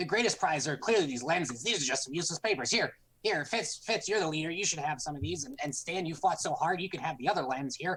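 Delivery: hurried, rushed, rattled-off fast talking. Handing out prizes to Fitz and Stan, a character is speaking very quickly. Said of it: "I'm speaking very quickly".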